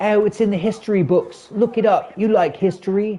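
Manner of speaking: put-on high, upper-crust posh London English accent. Retelling what an elderly woman told him, imitating posh English woman. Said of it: "posh English woman from London".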